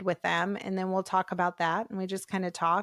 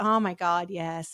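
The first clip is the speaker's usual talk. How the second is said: mock-embarrassed, humiliated tone. Speaker retelling how a caller admits finding her online, imitating an embarrassed caller. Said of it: "they're kind of humiliated".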